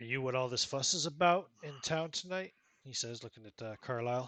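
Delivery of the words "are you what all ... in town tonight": intoxicated, boozy, pitched-up voice. Voicing a barefoot man with a whiskey bottle greeting visitors: drunk. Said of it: "He's obviously drunk".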